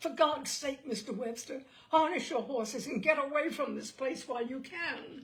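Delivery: trembling fearful pleading. At 11:30, a man grabs Daniel Webster's arm and urges him: shaking with fear, desperate courage. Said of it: "for he was a New Hampshire man. / said [name], / for he was a New Hampshire man. / and his voice was shaking with fear and a desperate courage".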